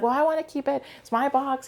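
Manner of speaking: put-on very high-pitched, playful bantering. Retelling a woman arguing over keeping a box: imitating someone bantering. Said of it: "kind of bantering".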